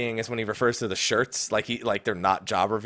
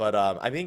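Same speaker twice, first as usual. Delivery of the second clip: ordinary talk, nothing marked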